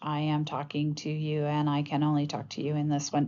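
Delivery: robotic, flat, unchanging one-note monotone. Listing symptoms, the speaker demonstrates monotonous, one-note speech like a robot. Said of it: "this kind of monotone, you know, one note kind of um, speech".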